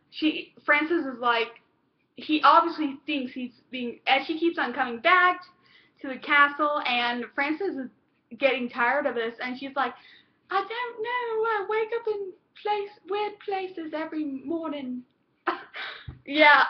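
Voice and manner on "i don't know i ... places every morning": put-on English accent, soft and high. Retelling a story, quoting a woman's line while trying her voice: put-on english accent. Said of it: "Sorry about that English accent".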